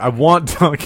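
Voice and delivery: screaming, yelling loudly. Holding the microphone and talking straight into it, screaming into the microphone. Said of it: "I'm screaming into you".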